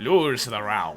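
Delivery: slow, low-pitched put-on silly voice.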